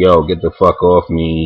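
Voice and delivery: ordinary talk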